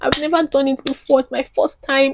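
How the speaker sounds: high-pitched, weepy, tearful, crying voice. Retelling what was said to a friend in the car: imitating own past crying. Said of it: "And I was just crying".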